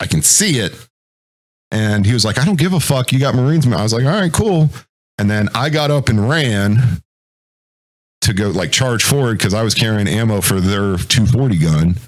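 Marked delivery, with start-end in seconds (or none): 2.4-3.7 put-on mild, dismissive half-yell. Telling how a man yelled at you to stop shooting, retelling his yell. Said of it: "he's yelling at me".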